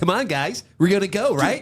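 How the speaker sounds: overexcited, hyped-up, bouncing-off-the-walls eager voice. Imitating a friend rushing everyone to the gym: imitating an overexcited friend. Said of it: "Bro, calm down".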